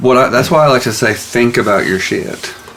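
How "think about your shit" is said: usual speaking voice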